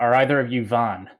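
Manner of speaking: sudden, abrupt shouting. Playing the character Talos, who quickly calls out to strangers: yelling in character. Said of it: "Talos quickly yells".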